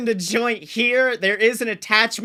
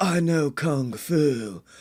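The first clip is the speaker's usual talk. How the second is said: calm, very low surfer-dude voice; 7 semitones lower, 3 dB quieter than usual. Recalling when the actor was almost a joke, quote him in a calm Keanu Reeves surfer boy voice. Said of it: "like Surfer Boy".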